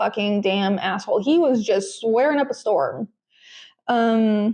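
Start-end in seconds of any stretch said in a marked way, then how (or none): none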